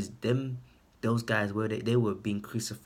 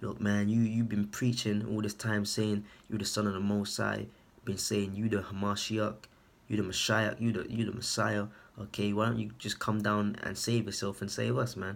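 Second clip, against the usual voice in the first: ordinary talk, nothing marked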